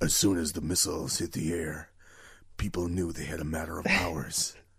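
hushed film trailer announcer voice. Discussing post-apocalyptic films, narrating in a movie trailer voice. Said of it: "that's a very good trailer voice".

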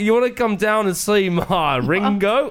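put-on Australian accent. Taking a turn doing an accent for the group, in an australian accent. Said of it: "I'll do Australia".

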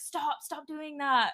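put-on yelling, fired back high and annoyed. Retelling how a friend yelled at someone pouring water: imitating someone yelling. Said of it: "yelling at him".

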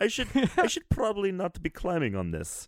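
bad Greek accent. Describing a video game, quoting the character being played; bad Cassandra Greek accent. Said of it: "It was a Greek accent".

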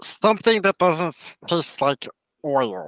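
high put-on character voice with swooping pitch. Answering the bartender's drink question in character, in a put-on character voice. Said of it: "Because I wanted to do a voice for it".

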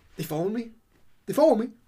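nervous, watchful delivery. Retelling a game scene where Mickey peeks through the door: imitating paranoid Mickey. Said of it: "he's super para in this game".

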